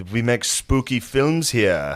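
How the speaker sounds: put-on Russian-accented villain voice. Retelling a movie scene as the Russian nihilist from The Big Lebowski. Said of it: "He's a nihilist, like".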